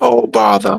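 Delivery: high cartoon bear voice. Imagining a bear seeing a traffic cone: Winnie the Pooh voice. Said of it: "Winnie the Pooh is like".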